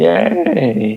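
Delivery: cracking voice. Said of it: "I'm not sure what my voice just did".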